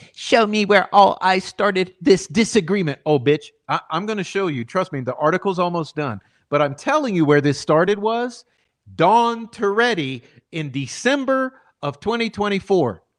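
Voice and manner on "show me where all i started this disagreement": snide, mocking, put-on bitchy voice. Quoting a demand aimed at the speaker: mocking bitchy voice. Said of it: "Let me do a little bitch voice".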